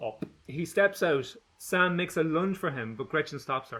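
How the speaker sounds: ordinary delivery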